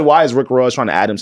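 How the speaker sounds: ordinary delivery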